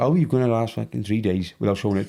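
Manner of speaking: plain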